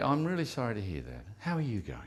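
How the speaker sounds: soft, gentle, soothing, caring, sympathetic tone. Demonstrating how to ask an open question, in a soft, gentle voice. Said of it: "you should hear a subtle change in my voice".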